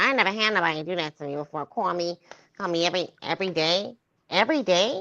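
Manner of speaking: put-on pleading, desperate voice. Mocking a woman who sounded desperate, imitating her voice. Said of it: "Let me do her voice".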